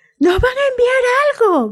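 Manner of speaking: very high, shrill, hurried yell. Narrator voicing a character in the circling plane, shouting. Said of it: "gritó Jim".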